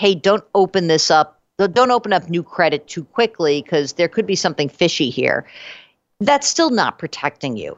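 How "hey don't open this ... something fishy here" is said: usual speaking voice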